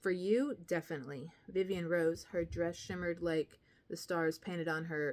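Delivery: ordinary delivery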